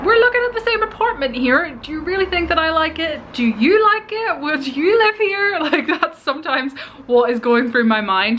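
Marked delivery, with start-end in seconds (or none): 0.1-5.6 exasperated, disbelieving tone, pitched high. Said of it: "I'm like".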